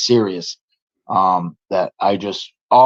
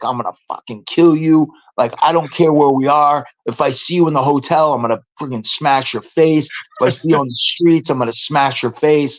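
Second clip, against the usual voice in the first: mock heated, threatening rant, screamed; 5 semitones higher than usual. Retelling own threats to an opponent on a call: retelling own screamed threats. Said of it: "I was just screaming and hollering".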